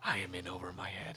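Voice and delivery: very quiet, true half-whisper. Half-whispering in character to a companion after asking to half-whisper: half-whispering in character. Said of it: "Can I whisper something to Avilius?".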